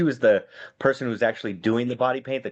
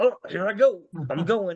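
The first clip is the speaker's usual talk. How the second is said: showy, put-on hurried manner; 8 semitones higher than usual. Retelling pretending to cross the street faster: imitating fake hurrying. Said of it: "you kinda give that hitch, like".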